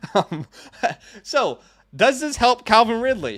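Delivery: speaking through laughter. A football commentator posing a question to listeners: laughing while talking. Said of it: "I'm laughing before I even say this".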